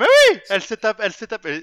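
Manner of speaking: very loud, shrill high voice. Defending Terry in a debate with the others, very high-pitched voice. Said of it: "Je peux prendre une voix très aiguë".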